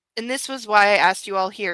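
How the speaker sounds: plain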